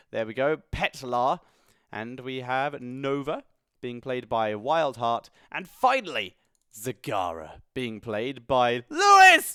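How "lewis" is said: very high, very loud, shrill shout. Announcing players, a name written in caps, shouting the name lewis. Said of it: "it's in caps, so it has to be shouted".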